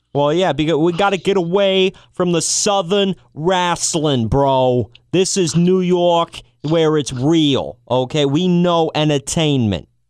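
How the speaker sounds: terrible, bad put-on New York accent. Speaking as the person who chose the name, in a terrible New York accent. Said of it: "my terrible New York accent".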